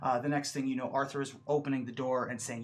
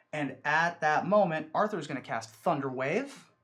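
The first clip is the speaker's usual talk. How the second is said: usual speaking voice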